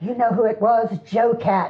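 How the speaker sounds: plain reading voice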